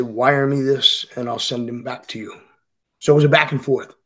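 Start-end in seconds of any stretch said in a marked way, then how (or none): none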